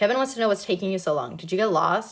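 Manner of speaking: ordinary delivery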